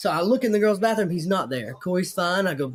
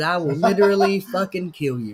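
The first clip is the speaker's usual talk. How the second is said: put-on angry, menacing tone; 3 dB louder than usual. Retelling a threat said to an old man at a bar: retelling an angry threat. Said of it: "I was so angry".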